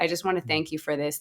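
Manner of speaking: put-on choked-up voice, catching, near tears. Retelling a caller's voicemail thanks: imitating a voice catching, near tears. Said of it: "her voice catches, and it's almost like she's gonna cry".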